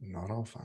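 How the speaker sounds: barely audible, very quiet hushed undertone. Voicing a character's answer after a companion says all is fine: very quiet. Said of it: "And very quietly".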